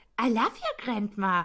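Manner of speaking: slow, derisive, scornful tone. Speaker retells how a woman mockingly repeated the last words of the man she shot. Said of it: "Und sie äfft ihn so richtig nach".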